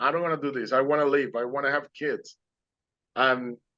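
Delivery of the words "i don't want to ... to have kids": usual speaking voice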